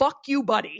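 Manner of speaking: put-on thickest possible Newfoundland accent. Recalling a man running off down the street, the speaker answers in the thickest Newfie accent possible. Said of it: "in the most newfie accent possible".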